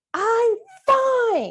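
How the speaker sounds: put-on very high, swooping sulky teenager voice, drawn out. Explaining tone of voice, speaker acts out a teenager, in a put-on teenager tone. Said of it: "takes me back to inner teenager".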